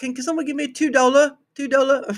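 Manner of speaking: very high, squeaky, bad British accent. Asking the room for two dollars in a put-on voice: terrible Ming Lee impression. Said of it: "a terrible fucking what's her name? ... but the British version".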